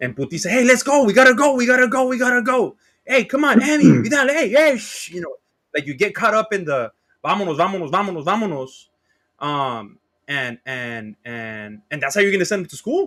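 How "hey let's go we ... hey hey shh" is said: shrill, very high-pitched yell. Recalling rushing them off to school in the morning, retelling own yelling. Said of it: "I maybe I yelled too much this morning".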